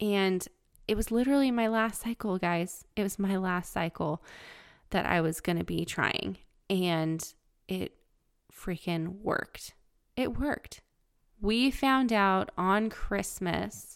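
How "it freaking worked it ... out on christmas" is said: voice strained, holding back tears. Speaking to viewers about finding out on Christmas, holding back tears. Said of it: "Trying not to cry".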